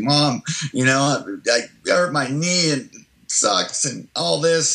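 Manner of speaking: put-on slow, tearful five-year-old voice, complaining tone. Describing a five-year-old coming in to Mom with a scraped knee, imitating a tearful child. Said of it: "you got tears in your eyes".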